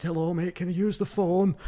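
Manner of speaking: put-on Manchester and Yorkshire accent. Retelling a stranger knocking at the door early one morning: Mancunian Yorkshire accent. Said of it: "this like like like Mancunian Yorkshire accent".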